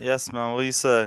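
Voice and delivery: groggy, sleepy, just-woke-up voice. Answering a greeting, sounding groggy as if just woken up. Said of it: "He sounds like you just woke up".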